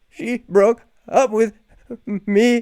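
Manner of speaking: acted, very high, loud, drawn-out sobbing whine. Retelling being dumped and crying in the basement: imitating his own past crying. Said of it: "crying like this".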